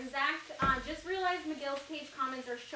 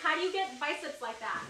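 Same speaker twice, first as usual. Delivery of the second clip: usual speaking voice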